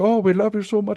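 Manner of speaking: bad put-on Indian accent, very high-pitched. Retelling what fans on cruise ships say: butchered indian accent impression. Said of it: "You start doing other people's accents".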